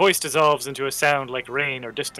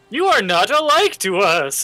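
jarring, discordant creature voice, high, loud; 7 semitones higher, 6 dB louder than usual. Voicing a line of dialogue, in a weird, discordant voice. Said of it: "It's a wrong voice, weird and discordant".

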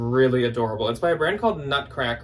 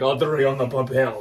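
put-on deep Russian accent. Showing how you always say a woman's name in the voiceover: deep Russian accent. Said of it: "I always have to say it like that".

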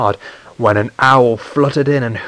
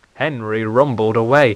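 ordinary delivery

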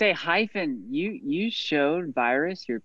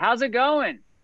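high-pitched, yelled-out voice; 8 semitones higher than usual. Walking up to two characters in character and greeting them: yelling out. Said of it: "and I yell out".

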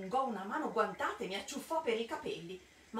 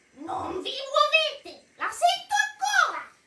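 very high-pitched, shrill, very loud shouting; 13 dB louder than usual. Reading Mildred's next cry in the story, shouted. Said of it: "Gridò Mildred".

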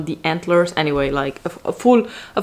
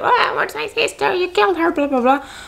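very high-pitched, aggressive shouting outburst; 13 semitones higher than usual. Retelling a brother accusing someone of killing his sister: imitating an aggressive man. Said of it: "very aggressive".

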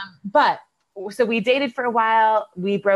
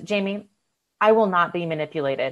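utterly calm and unruffled, acted voice; 3 semitones lower than usual. Retelling how a man answered Jamie's attempt, imitating a very calm voice. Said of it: "he goes in a very calm voice".

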